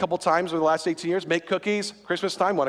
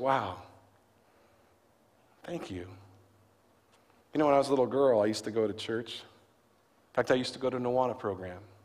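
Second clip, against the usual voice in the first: imitated very soft tone, quieter; 6 semitones lower, 5 dB quieter than usual. Retelling what a woman said to the group after being thanked, imitating a very soft tone. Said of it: "in a very soft tone".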